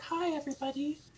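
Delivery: very high, light head-register tone. Comparing chest voice and head voice, greeting everybody in a high head voice. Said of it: "this is my head voice".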